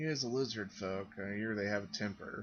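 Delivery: soft, light, quiet, offhand tone. A dwarf woman speaks to a lizardfolk player character: light, quiet remark. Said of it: "lightly, uh, quietly says to you".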